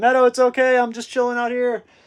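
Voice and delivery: acted-out high yell, calling out. Retelling calling from the hot tub to the dog: imitating own yell. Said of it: "yell from the hot tub".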